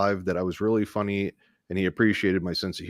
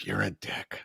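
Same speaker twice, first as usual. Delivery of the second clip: hushed, soft, breathy close-to-the-ear whisper; 8 dB quieter than usual. Joking about what someone at a conference said: imitating Nora whispering. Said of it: "she just whispered in your ear".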